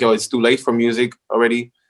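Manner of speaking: ordinary delivery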